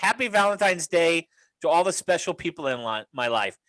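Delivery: ordinary talk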